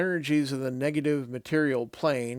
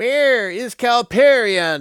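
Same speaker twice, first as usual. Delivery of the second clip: piercing, shrill, very loud cry; 7 semitones higher, 9 dB louder than usual. Narrator reads a voice crying out after an explosive whoosh, shrill voice. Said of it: "cries a shrill voice".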